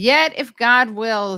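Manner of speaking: slow, loud, dramatic reading.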